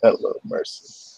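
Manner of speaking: low, breathy, weird deep whisper. Telling how a man greeted them while still at the door: weird deep voice. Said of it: "in like this weird deep voice that comes from like the the darkness".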